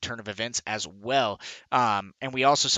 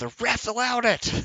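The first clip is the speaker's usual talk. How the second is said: very high, animated hollering yell; 12 semitones higher than usual. Commentating a card game, imagining a player's complaint: imitating Deadpan Mage yelling. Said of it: "Deadpan Mage is gonna be yelling at me".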